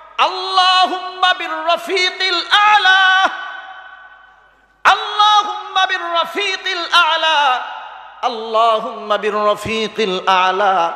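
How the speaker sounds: fervent, impassioned cry.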